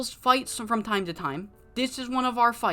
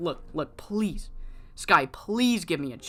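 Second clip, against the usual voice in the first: put-on pleading voice; 4 semitones lower than usual. Retelling a scene where a wrestler begs on his knees: imitating someone pleading. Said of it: "pleading by now".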